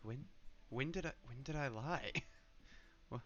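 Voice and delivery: hushed half-whisper under the breath. Once the door is shut, speaking to Bracken, half-whispering. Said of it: "I'm gonna whisper after the door is shut".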